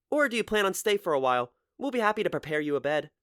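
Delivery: kind big-sister voice. Narrating Mori speaking to the narrator in a story, in a kind big-sisterly voice. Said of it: "in a kind big sisterly voice".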